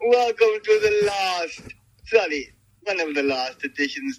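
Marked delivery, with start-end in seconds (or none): 0.1-1.6 high, slow Transylvanian vampire voice. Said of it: "a Transylvanian intro, like we're back from the dead".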